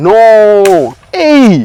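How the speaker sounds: mock exclaiming in a high, loud put-on voice. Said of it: "You say".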